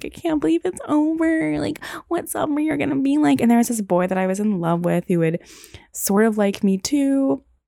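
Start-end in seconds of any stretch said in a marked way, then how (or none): 0.0-3.4 very high-pitched, tearful voice, sobbing through the words. Retelling crying alone in the dorm room at term's end: retelling own crying. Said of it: "just crying, being like".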